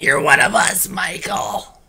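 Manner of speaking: raspy, threatening, menacing put-on voice. Reviewer recalls an actor's line from the film, doing a rasping impression. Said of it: "I think of him just rasping".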